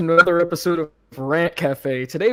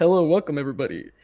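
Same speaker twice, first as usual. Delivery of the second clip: fake announcer-style voice. Introducing a topic to viewers, welcome in a put-on announcer voice. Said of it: "I'm being an announcer".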